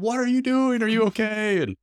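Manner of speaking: mock scream, pitched very high. Retelling a neighbor running out during a lake swim: imitating a neighbor screaming. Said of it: "ran out and screaming at me like".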